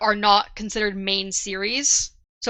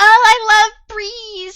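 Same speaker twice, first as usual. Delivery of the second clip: put-on flouncy cutesy girl voice, higher and louder; 12 semitones higher, 9 dB louder than usual. Answering what flouncy means by imitating Allrianne: flouncy cutesy Allrianne voice. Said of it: "can you define flouncy?".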